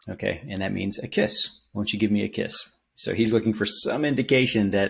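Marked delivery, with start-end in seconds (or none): none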